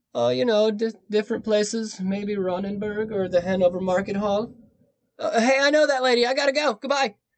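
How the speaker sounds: play-acted flustered, panicked stammer, very high pitch. Retelling how a suspect answered a butcher's question: imitating panicked Fritz. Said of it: "And then he panics and bolted".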